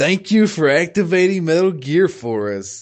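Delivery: smarmy game-show host voice. Quoting what he says: smarmy game-show-host voice. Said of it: "he's all smarmy about it too".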